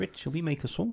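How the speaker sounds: put-on soft New Zealand accent. Showing a podcast co-host an impression they used to do, Rhys Darby Kiwi accent. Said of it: "Kiwi accent".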